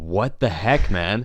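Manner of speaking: put-on fed-up, mad, slow, angry outburst. Retelling being splashed with water by a friend: retelling own angry outburst. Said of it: "And I was so mad".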